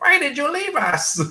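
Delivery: very high, tiny little cartoon voice. Recalling how the character talked in the cartoon: Puck's cartoon voice. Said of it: ""Ah, Mister Wolverine" voice, like that little".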